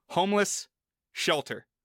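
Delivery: slow, spaced-out words, each separated by a pause. Showing the other speaker how to say the phrase, with words spaced apart. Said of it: "if you put more space in between the words".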